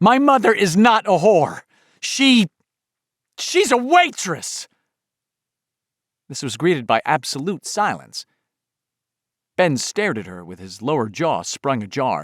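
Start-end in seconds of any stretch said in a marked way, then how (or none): 0.0-4.7 very high, shrill, furious cry, drawn out. Reading a story aloud, a girl crying out: shrill furious cry. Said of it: "cried out in a shrill, furious voice".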